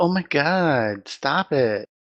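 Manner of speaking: very slow, grating voice, "god" stretched out. Mocking a woman whose voice they compare to nails on a chalkboard: imitating her voice. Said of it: "He emulates her too".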